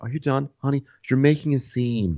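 patronizing talking-down tone. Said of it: "the most condescending thing".

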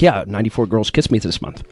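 put-on nervous voice. Imitating a man who became a pickup artist, imitating a nervous tone. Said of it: "he'd say it in that like really nervous tone".

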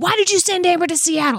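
mock, hot, high, furious drunken rage scream. Retelling an ex firing back at a mom: imitating someone screaming in rage. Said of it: "screaming at her with, like, a hot whiskey rage".

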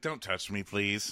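put-on crying voice. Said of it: "So Tormund's, like, crying".

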